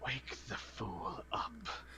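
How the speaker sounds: airy, breathy whisper, very soft and quiet. Narrating a scene, voicing an unseen speaker in a breathy voice. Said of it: "you hear a breathy voice".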